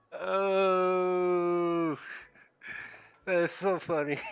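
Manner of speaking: talking through laughter, very slow, drawn-out oh. Reading game dialogue aloud and apologizing for it: laughing while talking. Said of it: "I'm sorry if I'm, like, laughing randomly".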